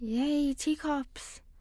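sarcastically. Searching the attic for Christmas decorations, one speaker reacts to finding teacups, sarcastic. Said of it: "Less of the sarcasm".

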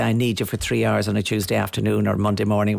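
plain

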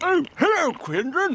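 very high voice, talking through a mouthful. [name] joins the show's Zoom call, greeting the host, mouth full. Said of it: "Sorry, I'm eating".

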